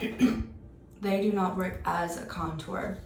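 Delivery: slow, voice giving out and failing. Advising viewers on cream versus powder contours, voice giving out. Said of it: "I'm losing my voice there".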